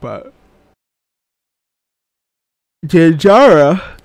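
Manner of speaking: talking through a yawn. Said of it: "I don't know why I'm yawning so much".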